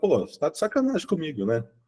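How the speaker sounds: relaxed, easygoing tone. Retelling what he tells a client, retelling in a relaxed tone. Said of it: "mas falando num tom de boa".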